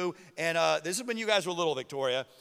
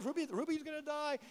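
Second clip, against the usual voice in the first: play-acted, very high, tearful sobbing voice; 10 semitones higher, 9 dB quieter than usual. Retelling what was said while crying about a dying bird: imitating crying.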